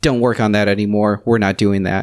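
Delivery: plain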